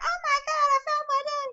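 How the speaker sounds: put-on very high, very loud girlish scream. Retelling a movie character's ending reunion: imitating a girlish scream. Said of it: "he screams like a girl".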